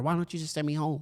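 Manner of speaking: ordinary talk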